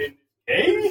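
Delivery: slow, high-pitched, puzzled tone of voice.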